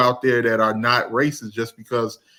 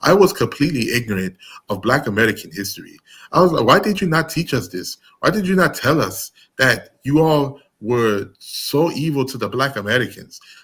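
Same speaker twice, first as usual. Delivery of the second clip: earnest put-on Nigerian-accented English. Quoting what a Nigerian woman said, in a Nigerian accent impression. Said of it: "my best Nigerian accent".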